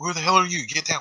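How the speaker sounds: high whisper-shout, shouting under the breath. Voicing a man who has just spotted a stranger, whisper-shouting. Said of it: "Like he's whisper".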